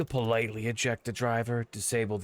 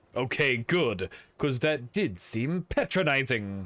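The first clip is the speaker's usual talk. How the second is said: odd, clipped mid-Atlantic accent; 3 semitones higher, 4 dB louder than usual. Speaker reacting to a miniature freight train, in a weird clipped transatlantic accent. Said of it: "I'm talking in a really weird clipped form of the transatlantic accent".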